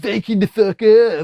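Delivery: very loud, high, slow, belted cartoonish voice. Quoting a joke t-shirt slogan: South Park voice. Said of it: "I say it in a sort of South Park voice".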